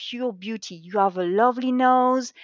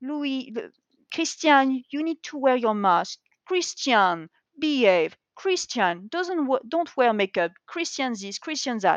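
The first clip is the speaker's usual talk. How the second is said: ordinary talk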